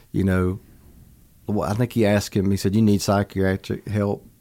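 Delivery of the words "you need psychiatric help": usual speaking voice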